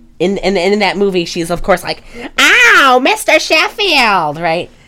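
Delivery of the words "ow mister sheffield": high, nasal voice pushed through the nose. Imitating Fran Drescher while talking about her voice coach: Fran Drescher impression. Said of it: "make it less nasal".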